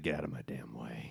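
barely audible, very soft, quiet mumbling. Describing how the character Bakugo talks in this episode: Bakugo mumbling. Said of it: "mumbling, basically. He's like".

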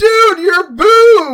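very high, shrill, loud scream, boob drawn out. Speaker recounts what the others screamed at them while surfing: retelling a scream. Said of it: "they screamed out".

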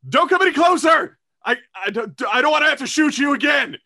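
frightened, panicked, very high stumbling shout. Voicing a cornered character who warns intruders away: panicked warning. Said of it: "hiding behind it. They're like".

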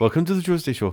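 Indian English accent. Repeating a show greeting while trying out accents; Indian-sounding accent.

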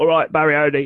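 put-on Cockney accent. Quoting what the villain apparently said as his catchphrase, in a put-on Cockney accent. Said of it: "so in a Cockney accent".

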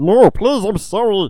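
very high, loud, slow, drawn-out, panicked begging. Imagining a masked Ghostface suddenly begging for mercy, in a panicked Kermit voice. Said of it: "What is Kermit now? What is going on with the accent?".

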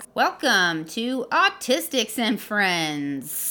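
sing-song put-on podcast host voice. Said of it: "Is that a podcast voice?".

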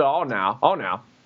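mock elderly man voice. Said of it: "He's like".

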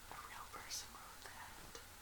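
soft, startled whisper.

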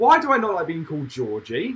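ordinary talk

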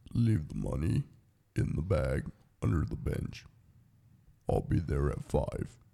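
hushed, disguised cartoon-style voice-changer voice. Right after being told they sound like a TV voice changer, in a TV voice-changer voice. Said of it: "sound like every fucking cartoon and every TV show that ever tried to like do like voice changers".

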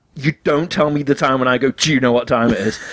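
ordinary talk

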